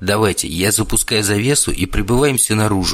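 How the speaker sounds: ordinary delivery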